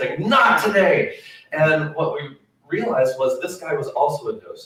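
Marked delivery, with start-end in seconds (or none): 0.2-1.2 play-acted, high, confrontational in-your-face shout. Retelling how an angry man ran back into the gallery: imitating a man shouting. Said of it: "he was shouting like this".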